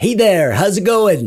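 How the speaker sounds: overexcited, hyped-up voice. Opening a video, then realizing it should be chill: not chill, overexcited greeting. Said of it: "I forgot this was a chill video".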